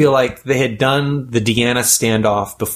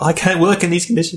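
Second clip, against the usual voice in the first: put-on English accent, higher pitch; 6 semitones higher than usual. Act out Jamie Bamber storming off the set, as Jamie Bamber in an English accent. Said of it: "give that an English accent".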